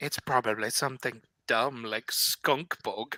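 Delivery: low, soft, half-whispered muttering under the breath. A player's character half-whispers to another character about the barkeep, half-whispering under breath. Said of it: "will whisper to Bombus and say".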